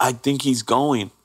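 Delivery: gentle, cried-out scream. Retelling what a woman screamed when he stopped breathing, retelling a scream. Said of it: "she screams".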